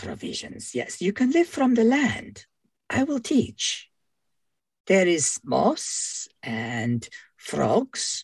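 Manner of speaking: lizard creature voice, short broken phrases, broken English. In a tabletop game, the lizard man scout responds to offered provisions, lizardfolk scout voice. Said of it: "There appears to be a lizard person scout of some description has come calling at the fort. / Lizard man kind of snorts".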